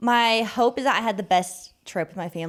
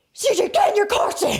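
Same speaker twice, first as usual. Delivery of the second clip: put-on scream, higher; 11 semitones higher, 4 dB louder than usual. Retelling a moment with a child in a parking lot: imitating own scream.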